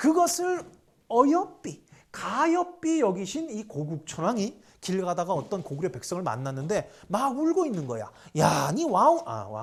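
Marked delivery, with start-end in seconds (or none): 8.4-9.6 put-on loud, drawn-out Gyeongsang regional accent, satoori. A storyteller voices the king addressing a weeping commoner, Gyeongsang dialect accent. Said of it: "경상도 사투리구나".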